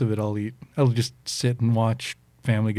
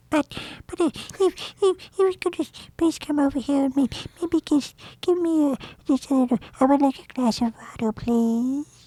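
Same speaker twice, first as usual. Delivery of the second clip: very high, tiny, small squeaky voice. Asked by the others to let them hear it, showing off a tiny voice. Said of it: "I have a tiny voice".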